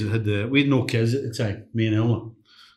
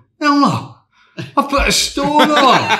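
very high, shrill, long drawn-out hollered shout; 7 dB louder than usual. Retelling calling out to someone at the counter: retelling a shout. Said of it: "and I'm shouting".

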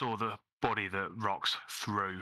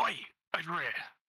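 high, half-whispered call from a distance; 9 semitones higher than usual. Retelling calling to Oryk from far away, a whisper-shout. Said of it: "I kind of whisper shout at Oryk".

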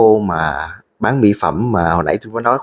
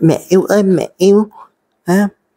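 very high, drawn-out, wheedling, whiny coaxing; 11 semitones higher, 4 dB louder than usual. Acting out someone who turns clingy once calm: mock-whiny, coaxing voice. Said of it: "nó lại nhõng nhẽo".

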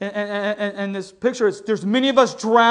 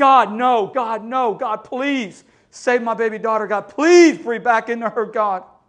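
play-acted desperate, all-out begging plea. Retelling her dad's words while someone tried CPR, imitating pleading to God. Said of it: "he's just pleading to God".

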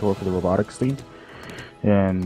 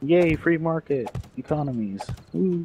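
high, fake, mock-cheery yay. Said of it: "That's sarcasm".

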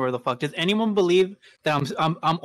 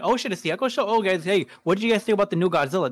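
sarcastic remark; 2 semitones higher than usual. Retelling how they answered pot shots with a joke: retelling own sarcastic joke. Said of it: "make it some kind of sarcastic joke".

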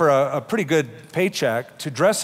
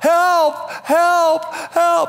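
mock, very high, shrill, loud frantic yell; 5 dB louder than usual. Telling a joke, acting out a trapped character calling out: retelling a yell for help. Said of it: "he just yells out".

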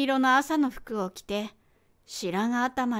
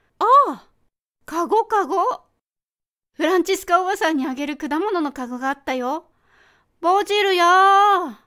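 put-on bright, amused, high, ringing young woman's cry; 6 semitones higher, 7 dB louder than usual. A narrator reads the daughter crying out after getting into the car, a sudden shout. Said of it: "それに混じってよく響く面白げな若い女の声でこう言う。 / それに混じってよく響く面白げな若い女の声でこう言う。 / それに混じってよく響く面白げな若い女の声でこう言う。".

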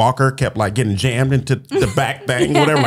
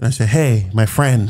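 ordinary talk

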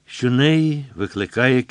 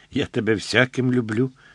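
ordinary delivery

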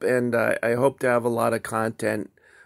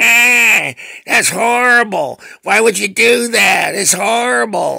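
very high, shrill, furious yell, drawn-out ah; 10 semitones higher, 10 dB louder than usual. Retelling how a woman at work reacted: imitating someone yelling furiously. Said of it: "yelling at me".

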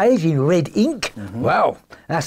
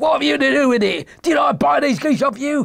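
fierce, raised, high-pitched shout; 9 semitones higher than usual. Narrator reads a salesman shaking his fist at a cringing little man: shouting. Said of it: "he shouted".

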